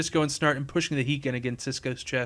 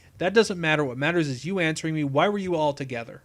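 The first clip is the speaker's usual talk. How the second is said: plain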